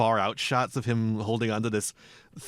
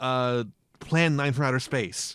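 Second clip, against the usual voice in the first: normal talking voice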